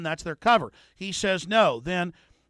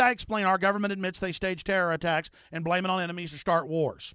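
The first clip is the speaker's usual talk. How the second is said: plain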